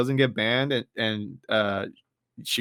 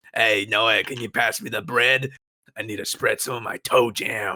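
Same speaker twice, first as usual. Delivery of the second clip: put-on crusty old man voice, much lower; 2 semitones lower than usual. Hosts banter on the Crusty Couch, talking in a crusty old man voice. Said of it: "why don't we just talk like crusty old men".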